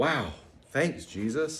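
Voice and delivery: put-on, facetious, sarcastic tone. Acting out a disciple answering jesus's warning: put-on facetious sarcasm. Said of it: "I'm being facetious".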